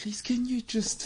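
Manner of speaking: very quiet, hushed, coaxing, pleading woman's voice. Explaining what ladies are like when cold, imitating how ladies ask. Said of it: "They do that voice as well".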